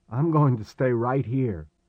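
ordinary delivery

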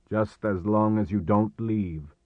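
ordinary delivery

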